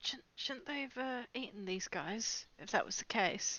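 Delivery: hushed, whispered aside under the breath. Whispering a question aside to Snapjaw: whispering under breath. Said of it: "under my breath, I'll whisper to Snapjaw".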